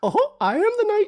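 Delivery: voice pitched way up high and very loud. Joking about Batman as Mickey Mouse, doing Mickey Mouse voice. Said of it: "what if Batman was Mickey Mouse?".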